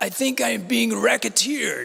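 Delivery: put-on gravelly heavy Russian accent.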